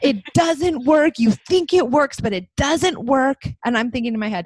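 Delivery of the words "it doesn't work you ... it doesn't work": put-on child voice, angry yell, higher and louder. Retelling what a furious child yelled at her parent: imitating a child yelling angrily. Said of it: "yelling at me and saying".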